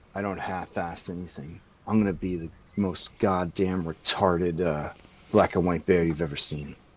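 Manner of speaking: completely earnest, deadly serious tone. Voicing Knight's reply to a dare, in a very serious voice. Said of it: "says in a very serious voice".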